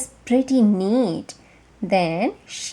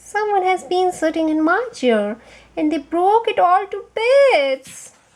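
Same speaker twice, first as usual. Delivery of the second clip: small, sweet, high voice, some parts held; 6 semitones higher than usual. Reading the three bears story aloud, the narrator voices Baby Bear's sweet little voice. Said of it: "cried Baby Bear in his sweet little voice".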